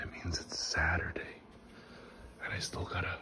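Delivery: soft whisper under the breath. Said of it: "and I'm whispering".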